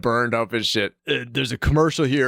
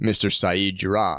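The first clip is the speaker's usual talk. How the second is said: normal talking voice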